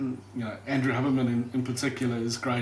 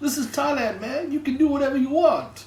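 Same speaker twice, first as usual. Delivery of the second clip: bad, loud, very high put-on Thai accent; 13 semitones higher, 5 dB louder than usual. Retelling what a barman in Thailand said: terrible impersonation of his accent. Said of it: "Terrible impersonation there of his accent".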